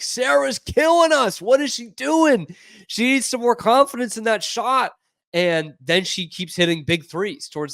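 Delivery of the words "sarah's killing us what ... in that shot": yelling, pitched up. Retelling watching a basketball game: retelling own screaming at the TV. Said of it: "I'm screaming at my T V".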